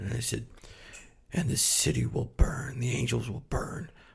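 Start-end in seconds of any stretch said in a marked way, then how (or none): 1.3-3.9 voice dropped an octave lower, quieter. Retelling creeping out mom with Revelation talk: voice dropped an octave lower. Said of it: "I can drop my voice an octave lower".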